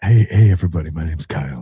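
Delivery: put-on quiet reporter whisper. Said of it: "that's the quiet reporter again".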